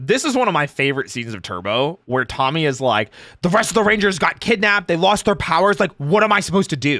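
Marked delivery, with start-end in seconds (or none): 3.4-7.0 mock at-wits'-end desperation, pitched up. Imitating Tommy after the other Rangers were kidnapped: Tommy at the end of his rope. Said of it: "he's on the end of his, like, rope".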